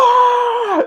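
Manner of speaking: huge, high frustrated scream. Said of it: "and I just screamed".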